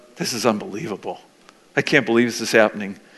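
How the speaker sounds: whisper under the breath. Retelling words said to a co-leader before praying: retelling a whisper under breath. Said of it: "I whispered under my breath".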